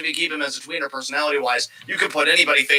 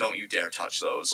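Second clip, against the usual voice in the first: stern fatherly tone; 9 semitones lower, 11 dB quieter than usual. Retelling how Regal warns Johnny off the brass knucks: stern father voice as William Regal. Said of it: "almost like stern father, William Regal".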